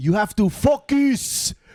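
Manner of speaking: put-on French-speaking Belgian accent. Retelling what a Belgian boss always said: French-speaking Belgian accent. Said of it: "That was a good accent".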